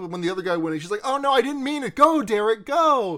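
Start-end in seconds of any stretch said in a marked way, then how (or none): 1.0-3.2 acted-out, high, drawn-out, two-faced fake cheering. Retelling how a character cheers on one man: imitating manipulative cheering. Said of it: "nakedly manipulating both of the men".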